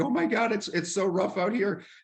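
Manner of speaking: very high, sobbing, tearful panic. Playing a captain throwing up and crying in rough waters: pretend crying in panic. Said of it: "I'm throwing up over the edge of the ship and I'm crying".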